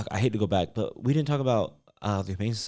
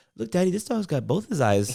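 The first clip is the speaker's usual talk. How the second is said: put-on very high, squeaky small child's voice; 9 semitones higher than usual. Retelling what Kiana said at the shelter: imitating Kiana. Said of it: "She's like".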